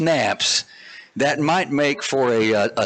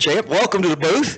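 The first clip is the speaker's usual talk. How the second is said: out of breath, higher; 4 semitones higher than usual. Arriving up in the booth, speaker welcomes a guest, out of breath. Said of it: "I am completely out of breath".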